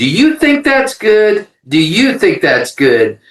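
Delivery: play-acted challenging tone. Retelling an argument in a parking lot: imitating his classic challenging question. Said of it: "he sort of did his kind of classic".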